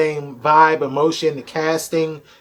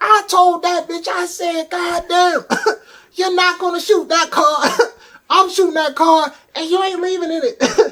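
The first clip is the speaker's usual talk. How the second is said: very high, brash comic rant with bravado; 14 semitones higher than usual. Describing comedians to the others, doing a Richard Pryor impression. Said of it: "It's an amazing impersonation".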